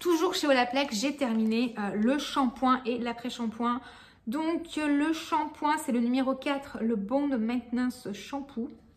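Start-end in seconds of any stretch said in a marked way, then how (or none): 6.8-8.7 badly managed, poor English accent. Recommending hair products, saying an English product name in a bad English accent. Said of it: "avec mon accent anglais à chier".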